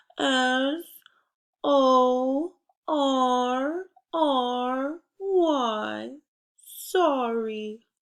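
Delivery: very slow, apologetic voice with R stretched out. Host spelling a word together with listeners, in a sorry voice. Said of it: "Can you spell sorry in a sorry voice?".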